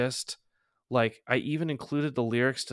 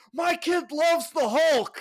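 very high, shrill, loud yell; 6 dB louder than usual. Telling a story, the speaker acts out a man holding up a comic; retelling a yell. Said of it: "he just yells".

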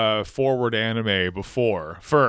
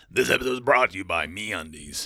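rough, gravelly advertisement announcer voice; 4 semitones lower than usual. Asked to do Alex Jones selling underwear: Alex Jones gravelly voice. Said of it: "I can do the gravel".

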